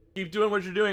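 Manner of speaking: very high, loud shouted yell. Speaker announces their character's shout during a fight, yelling. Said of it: "I'm just gonna yell".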